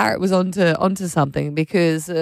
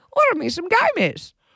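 put-on parrot voice in higher pitch; 12 semitones higher than usual. Retelling the parrot ordering snacks through Alexa: imitating Pete the parrot. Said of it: "And then he gives it".

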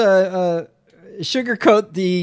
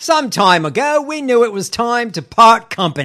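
shoddy, bad put-on Australian accent; 3 semitones higher, 3 dB louder than usual. Act out the announcement that the deal is off, in a bad australian accent. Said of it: "In my shitty Australian accent".

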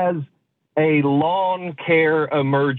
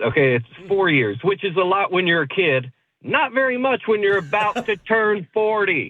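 half-yelled, insistent delivery; 4 semitones higher than usual. Explaining the age gap with a younger sister to the hosts: yelling. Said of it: "Are you yelling".

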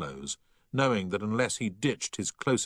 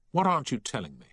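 insistent, demanding, pressing tone; 4 semitones higher than usual. A man grabs his colleague by the ear and presses him: demanding. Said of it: "he demanded".

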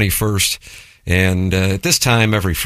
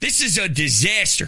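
put-on very high-pitched Philadelphia accent; 11 semitones higher, 5 dB quieter than usual. Imagining how he'd react if the Phillies dropped a costly fly ball, Philadelphia accent. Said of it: "That accent's unbelievable".

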